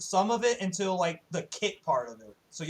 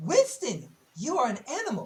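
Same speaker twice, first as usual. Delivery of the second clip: high, swooping, drawn-out character voice with swinging pitch; 6 semitones higher than usual. Quoting a game character's line after the answer is guessed: attempted Tracer voice. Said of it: "That sounded more like May".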